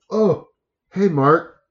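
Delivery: mock sarcastic tone. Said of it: "feel the sarcasm".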